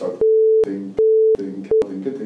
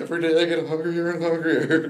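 high, put-on pitiful, genuinely worried tone; 8 semitones higher than usual. Quoting a man's line and how he said it: mimicking a worried voice. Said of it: "he says it so worried".

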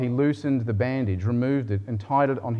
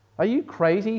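high, scornful, contemptuous sneer; 9 semitones higher than usual. Narrator reading a man's reply to the ragman's question, sneering. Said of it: "sneered the other".

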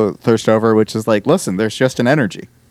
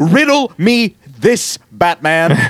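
put-on slow, high, drawn-out delivery; 6 semitones higher than usual. Imagining how an actor would say a villain's line: Danny McBride as the Riddler. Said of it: "the way he would have said it".

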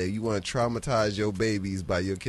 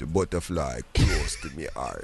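very deep, dropped-down put-on voice; 7 semitones lower than usual. Imitating a dancer answering a post interview question, in an extra deep put-on voice. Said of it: "you notice his voice get extra deep when".

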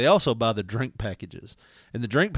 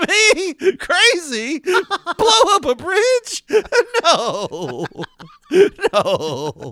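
mock very slow, swooping, very loud, high laughing; 9 dB louder than usual. Showing him how to say his denial, laughing while speaking. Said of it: "when you laugh and say it".

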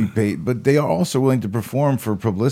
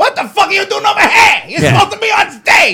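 shrill, very loud, high, furious screaming rant; 9 dB louder than usual. Pretending to storm up and scream at a worker: screaming Jon Taffer impression. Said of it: "just screaming at this girl while she's at work".

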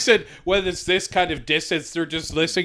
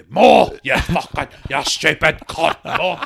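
thick put-on voice, louder; 4 dB louder than usual. Acting out a scene from EastEnders, very thick Trevor voice. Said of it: "Like in a very thick".

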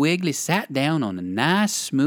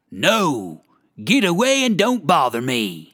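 surly, unpleasant growling voice. Reading a story aloud, a voice behind the door turns the rabbit away, growling. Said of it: "Growled a most unpleasant voice".

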